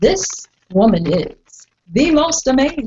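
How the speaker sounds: grand announcer voice. Introducing a woman, in an announcer voice. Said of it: "I'm going to do my announcer voice".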